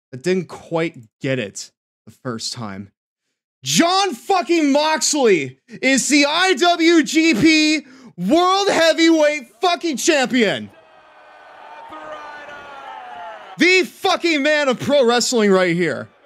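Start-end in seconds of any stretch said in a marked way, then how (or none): 3.6-16.0 very high-pitched, emphatic, loud shouting. Repeating a wrestling result to chat after muting music: loud emphatic announcement. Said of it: "I'll spell it out for you one more time".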